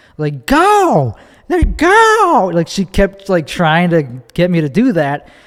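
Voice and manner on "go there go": put-on very high, swooping drunken holler, go drawn out. Retelling how a woman yelled at the car to go: imitating a drunk woman yelling. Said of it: "this drunk woman was, like, yelling at me to go".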